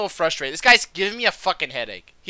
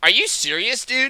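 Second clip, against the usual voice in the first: play-acted, heated anger with raised pitch; 6 semitones higher than usual. Retelling the moment the disc got swatted: imitating own past angry retort. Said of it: "I was fucking angry".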